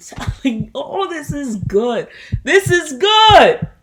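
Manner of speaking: very loud, high, stretched-out yelling. Opening a podcast episode, the host suddenly breaks off, yelling. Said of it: "I'm sorry for yelling".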